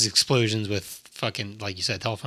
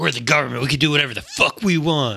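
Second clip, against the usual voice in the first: loud, intense pro wrestler promo-style voice; 4 semitones higher, 4 dB louder than usual. Retelling a standoff, the speaker voices the government side in a wrestler voice. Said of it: "I made them sound like a wrestler".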